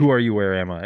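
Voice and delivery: rushed, with words blurred into one. Retelling a stranger's question on a night walk: imitating words rushed together as one word. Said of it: "as one word, she goes".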